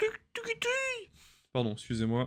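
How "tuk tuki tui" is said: put-on squeaky baby creature cry. Trying out the cry of a game creature, Togepi cry imitation. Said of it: "le bruit de Togepi".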